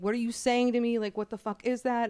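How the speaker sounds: ordinary talk, nothing marked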